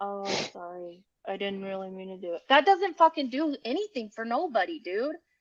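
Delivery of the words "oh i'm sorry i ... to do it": put-on monotone, much quieter. Criticizing an insincere apology, the speaker mimics it: mock monotone apology. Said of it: "being completely monotone".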